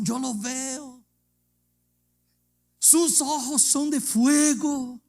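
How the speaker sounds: high, loud, drawn-out shouting out. Telling a story, the speaker acts out a woman shouting ever louder, retelling shouting louder. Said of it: "Y gritaba más".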